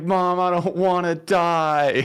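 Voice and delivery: acted, high, very slow bawling sob, "die" stretched. Retelling a childhood moment about to get in the bathtub: imitating own past bawling. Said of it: "I just started crying. I was, like, bawling".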